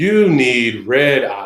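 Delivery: put-on old-style TV-ad pitchman voice. Reminding listeners how the man from Visine used to talk, do the monotone Visine guy voice. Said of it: "He talked real monotone".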